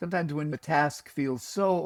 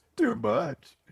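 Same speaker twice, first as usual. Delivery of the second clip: imitated tearful crying, higher pitch; 8 semitones higher than usual. Retelling a tearful reply to an inner voice: imitating own past crying. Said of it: "said back to the voice crying".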